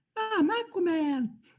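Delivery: squeaky voice pitched very high. Describing a game boss's weird contortion move, imitating a squeaky voice. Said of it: "and he squeaks".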